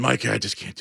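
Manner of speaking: mock ill-sounding voice. Retelling the sick host's morning phone call: imitating Ben Mulrooney sounding sick. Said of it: "that's what he sounded like".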